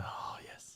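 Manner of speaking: soft, unvoiced whisper.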